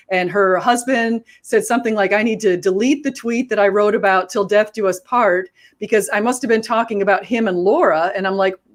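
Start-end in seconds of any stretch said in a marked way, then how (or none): none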